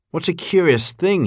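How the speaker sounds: high, surprised cry of wonder. A bird settling down to sleep is hit by a drop of water and cries out. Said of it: "he cried".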